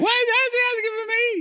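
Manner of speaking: very high, nervous squeak. Retelling his own reaction on hearing he was asked for: Pee-Wee Herman voice. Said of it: "I do the opposite".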